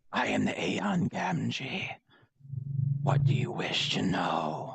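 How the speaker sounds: very slow, ghostly whisper. Voicing a spirit speaking through whispers in the fog: whispering spirit voice. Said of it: "through the whispers in the fog".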